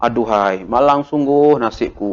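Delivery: grieving, mournful, sorrowful tone. Showing how an exclamation sentence carries feeling, said in a sad tone. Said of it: "Kalau kita sedih, kita cakap dengan nada yang sedih".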